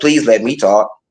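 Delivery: put-on little girl voice. Retelling own past words during an argument: imitating self like a little girl. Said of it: "I'm sitting here like a little girl".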